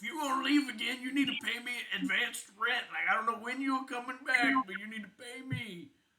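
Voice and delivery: shrill yelling rant. Retelling a landlady's angry demand overheard in an altercation: imitating someone yelling. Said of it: "and she's just, like, yelling".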